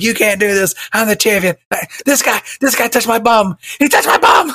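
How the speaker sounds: very high, frantic, shrieking screaming. Retelling how a man was escorted out by security, imitating someone screaming. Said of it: "he got escorted out by security and he was screaming".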